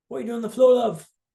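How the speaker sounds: very poor British accent.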